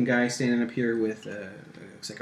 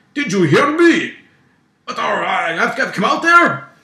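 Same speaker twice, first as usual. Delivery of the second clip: put-on grumpy old man yell, Russian accent, much higher, louder; 11 semitones higher, 13 dB louder than usual. A voice from the tugboat interrupts the quiet: grumpy old man yelling. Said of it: "This is the grumpy old man yelling".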